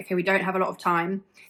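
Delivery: ordinary delivery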